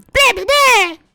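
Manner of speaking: high-pitched squeaky voice. Trying out a voice for a character after being asked: high-pitched voice. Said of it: "the high-pitched one".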